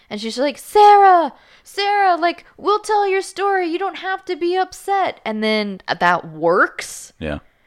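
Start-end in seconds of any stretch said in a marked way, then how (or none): 0.6-5.2 very high, loud shouted yell. Retelling a story where a girl yells inside a house, imitating a girl yelling. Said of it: "starts yelling in the house".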